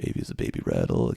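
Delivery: very quiet, barely audible whisper under the breath. Showing how they practice these by whispering to themselves, very quiet whisper. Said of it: "I'll usually actually kind of whisper to myself really, really quietly".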